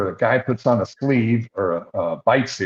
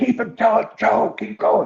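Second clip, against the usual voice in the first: very high-pitched, urgent, screamed delivery; 11 semitones higher than usual. Retelling urging his dog on to win the hang-time event, acting out a scream. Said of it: "So I'm like screaming at him".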